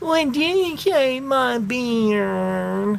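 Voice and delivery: high, whiny sing-song voice, "beard" drawn out. A father retells his daughter's question while she shaves his hair, imitating a whiny voice. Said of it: "she goes in this whiny voice".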